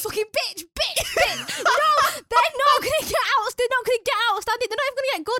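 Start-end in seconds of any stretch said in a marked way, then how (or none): 0.0-1.6 mock unruly child yelling, drawn-out and swooping. Retelling what a nursery child shouts, imitating a child shouting. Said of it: "carries on and starts shouting".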